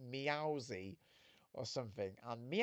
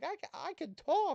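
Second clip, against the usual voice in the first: put-on very high, loud, slow, drawn-out forties Brooklyn accent; 5 dB louder than usual. Retelling a Pokemon scene where Meowth learns to talk: 1940s Brooklyn accent as Meowth. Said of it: "nineteen forties Brooklyn accent".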